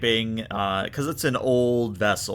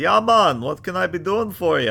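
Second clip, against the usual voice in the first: loud, jovial, cheery put-on Jamaican accent; 8 semitones higher, 6 dB louder than usual. Narrator voicing a man on the SS Weatherton answering a channel: jovial Jamaican accent. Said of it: "A very jovial Jamaican man says".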